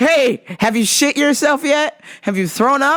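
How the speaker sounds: loud, high shouted voice. Retelling how a coworker shouted out someone's business, imitating her shouting. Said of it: "Now she's shouting out his business".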